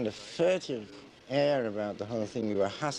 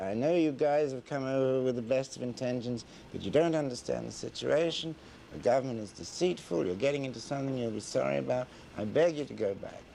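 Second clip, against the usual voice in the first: ordinary talk, nothing marked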